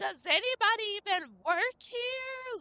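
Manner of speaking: very high, shrill, furious yell, drawn out. Retelling how an older lady stomped around a store: imitating someone yelling angrily.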